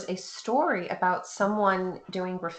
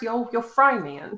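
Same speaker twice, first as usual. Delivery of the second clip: put-on cartoon voice, much higher; 4 semitones higher, 6 dB louder than usual. Speaker tries a line from Aqua Teen Hunger Force: Carl voice from Aqua Teen. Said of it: "the voice that he does in Aqua Teen Hunger Force".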